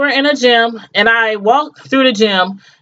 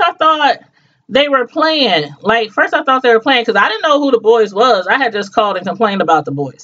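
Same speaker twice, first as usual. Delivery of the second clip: normal talking voice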